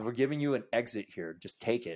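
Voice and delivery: ordinary talk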